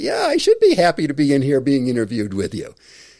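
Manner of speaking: cheerful, excited, bright happy voice, swooping. Showing how to sound happy at the start of an interview. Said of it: "Try going in and being happy".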